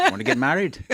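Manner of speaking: bad Scottish accent, high, loud, sliding into Irish. In an improvised dating bit, answering the date in a bad scottish accent. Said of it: "That's a pretty Irish accent. That's not a good Scottish accent".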